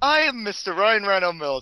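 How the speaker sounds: super sophisticated, affected, fancy put-on voice. Asked who he is, the speaker introduces himself in a super sophisticated voice. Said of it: "in my like super sophisticated voice".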